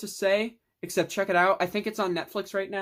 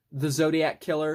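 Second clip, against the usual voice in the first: normal talking voice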